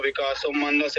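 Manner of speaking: ordinary delivery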